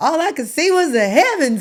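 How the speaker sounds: very loud, high, triumphant shout. Retelling what was yelled after the first wheelie: retelling a yell. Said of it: "And I yelled".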